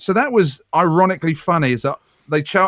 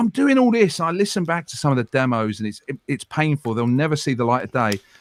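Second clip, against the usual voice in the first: normal talking voice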